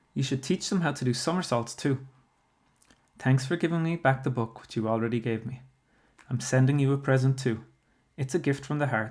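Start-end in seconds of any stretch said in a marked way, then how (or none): none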